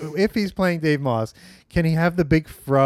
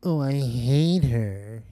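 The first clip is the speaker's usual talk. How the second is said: put-on effete drawl, lower pitch; 4 semitones lower, 3 dB quieter than usual. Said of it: "It's like".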